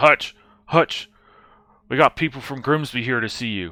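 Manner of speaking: goblin taskmaster character voice. Voicing a goblin taskmaster knocking on a door: goblin taskmaster voice. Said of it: "this goblin taskmaster kind of knocks, knocks on the door and says".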